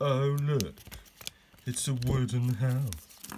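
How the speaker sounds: very slow, overdone, exaggerated sarcastic drawl. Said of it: "how you can be sarcastic about a wooden house".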